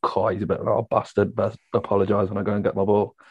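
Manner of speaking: ordinary talk, nothing marked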